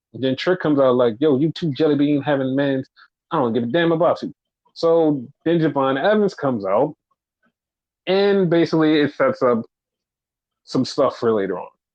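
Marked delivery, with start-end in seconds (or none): 1.2-4.3 put-on thick Southern US accent. Retelling a wrestling segment, imitating Trick: thick Southern accent. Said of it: "a really thick down south accent".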